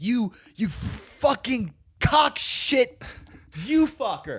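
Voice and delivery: very high, jumbled, drawn-out furious swearing. Retelling his own words when angry: imitating himself angry, jumbled swearing. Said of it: "When I get angry ... I'm like".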